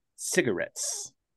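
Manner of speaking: breathy, hushed, suave ad-man voice. Joking on a podcast about writing advertisements, do a Don Draper impression. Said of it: "Is that your Don Draper impression?".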